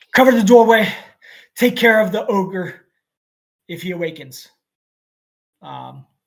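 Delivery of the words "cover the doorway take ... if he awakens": very loud shouting. Narrating a game scene, a character calls back to the others: calling out behind him. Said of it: "he calls out behind him".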